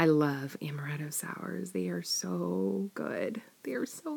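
soft unvoiced whisper full of longing.

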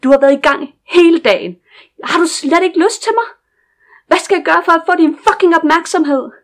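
loud high-pitched shouting. A character speaking in Danish, yelling. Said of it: "I'm sorry for yelling".

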